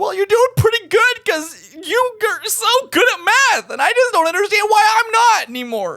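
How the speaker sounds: very high, sobbing through every word tearfully. In an acted scene, a character speaks to another, crying while speaking. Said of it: "if you stop crying".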